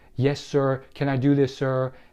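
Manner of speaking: ordinary talk, nothing marked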